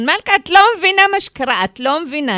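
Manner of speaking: high, loud yelling shout. A young man calls the speaker weeks later; retelling a shout on the phone. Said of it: "הוא צועק לי בטלפון".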